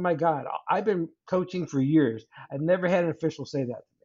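ordinary delivery

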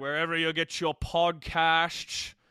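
slow, drawn-out delivery, stretched nice and slow. Reading out where to find the show: Sean Connery voice. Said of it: "I wanted to talk like Sean Connery there".

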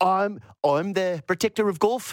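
loosely put-on Australian accent. Speaker ranting about golf viewership, then a kind of Australian accent. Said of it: "That was kind of Australian".

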